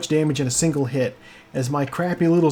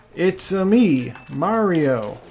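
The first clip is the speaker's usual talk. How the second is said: very slow, joyless, flat, unenthusiastic deadpan. Performing a Mario line with very little enthusiasm: unenthusiastic Mario line. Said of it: "I will now perform a Mario line with all the".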